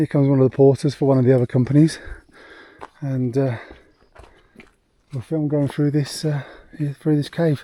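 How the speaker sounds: winded, out-of-breath delivery. A vlogger filming at high altitude narrates a passing porter, out of breath. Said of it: "I know I always sound out of breath".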